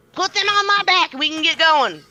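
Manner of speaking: own voice enlarged into loud, very high dragon voice. A player speaking as a dragon in the game: louder version of her voice. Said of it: "just a louder version of her".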